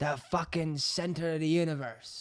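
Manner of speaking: high, grand, epic movie-hero style delivery. Retelling the manager's declaration about Thurles: imitating a dramatic movie-style line. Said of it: "as if it was being recorded in some, like, Mel Gibson movie".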